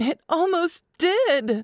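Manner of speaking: very high, strained, straining outcry. Julia answers Liam after he asks if she fears for him; shouting, strained voice. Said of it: "Julia shouted, her voice strained".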